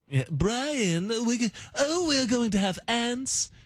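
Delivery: put-on very high, drawn-out British accent, each word stretched. Explaining that British is hard, then doing a Stewie voice. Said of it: "'cause Stewie's like".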